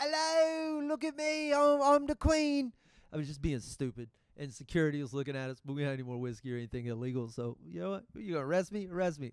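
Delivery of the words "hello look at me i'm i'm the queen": put-on over-the-top English accent, very high and very slow. Retelling how you were being stupid in an airport, do an exaggerated Russell Brand English accent. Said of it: "but exaggerated".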